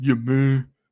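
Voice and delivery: attempted mock very deep voice. Imitating another person's very deep voice, attempted deep-voice impression. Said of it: "I can't even do that dude's voice".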